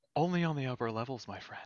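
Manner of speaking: conspiratorial voice. Voicing a masked stranger who leans in from behind: conspiratorial voice.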